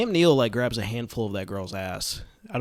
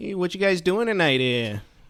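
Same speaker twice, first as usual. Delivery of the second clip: put-on, higher-pitched Midwestern accent; 6 semitones higher than usual. Describing velociraptors peering at people, voicing them in a Midwest accent. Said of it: "They have just Midwest accents".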